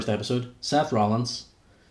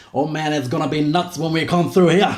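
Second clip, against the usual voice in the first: slurred put-on jive talk, higher and louder; 4 semitones higher, 5 dB louder than usual. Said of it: "his typical sort of slurred jive talk".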